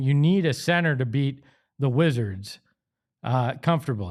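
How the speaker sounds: usual speaking voice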